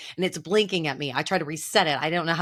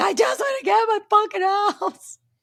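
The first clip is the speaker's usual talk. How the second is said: mock sobbing, pitched way up, loud; 5 dB louder than usual. Recalling pounding on the keypad to get into the house: retelling own crying. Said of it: "crying, going".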